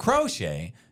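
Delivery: crochet with first syllable cro strongly stressed. Discussing how people say a word: stress on crow in crochet. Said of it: "you emphasize crow".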